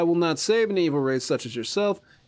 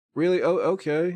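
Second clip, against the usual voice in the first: ordinary talk, nothing marked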